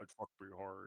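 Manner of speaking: very hushed, barely audible, creepy horror-villain voice. Friend riffing on a horror film reference, in a Buffalo Bill voice. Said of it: "you do that voice really well".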